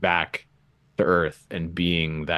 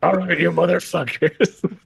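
very high, creaky, rough, grumpy robot voice; 12 semitones higher, 6 dB louder than usual. Describing a character whose robot head talks like this: imitating an ornery robot head. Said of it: "and it talks like this".

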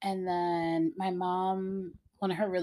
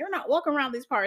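pitched-up put-on rural country accent; 6 semitones higher than usual. Retelling what people who jumped out at a scary show said: country accent. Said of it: "have like country accent".

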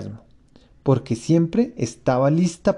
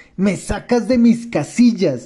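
curt, furious high screech, cut short; 6 semitones higher, 3 dB louder than usual. The mouse rebukes Alicia for not paying attention, shrieking, curt, very angry. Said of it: "chilló el ratón, tajante y muy enojado".

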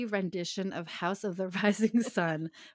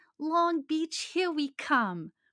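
cute, high, swooping sing-song shout; 8 semitones higher than usual. Retelling a movie scene where a passenger shouts: cute little Betty Boop accent. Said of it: "she shouts in a cute little Betty Boop accent".

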